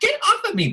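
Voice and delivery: high-pitched cry. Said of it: "She's like".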